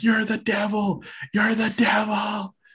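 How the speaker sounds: frenzied, crazed, very high-pitched shout. Retelling how a fan in the front row shouted at a wrestler: imitating a fan shouting. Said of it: "some crazy fan in the front row is shouting at him".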